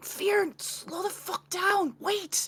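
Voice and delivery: shouting in a loud whisper. Sprinting after a companion in a role-play, a player's character calls out, whisper-shouting. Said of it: "I'm like whisper shouting".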